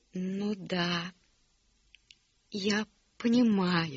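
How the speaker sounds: gentle, loving, very tender, slow, drawn-out. Narrator reads an aunt's reply, very tender. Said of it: "очень ласково ответила тетя Полли".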